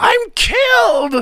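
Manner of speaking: shrill, very high, loud shriek full of anguish. A narrator reads a character just punched on the nose; shrieked. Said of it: "he shrieked".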